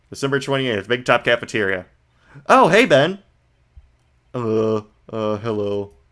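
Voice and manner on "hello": put-on voice, slow and gloomy. Greeting Ben at the cafeteria while doing an Eeyore voice. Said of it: "I was doing an Eeyore voice for this guy".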